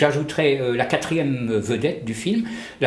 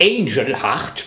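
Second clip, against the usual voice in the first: said with its true, proper English accent; 3 dB louder than usual. Introducing a 1987 film by its title: English pronunciation of the title. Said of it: "pour vraiment le prononcer à l'anglaise".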